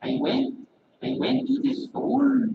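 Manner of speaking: high-pitched Indian accent pushed through the nose. Showing the nasal accent with an example sentence: nasal Indian accent of Prem Rawat. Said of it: "You can really feel it in your nose".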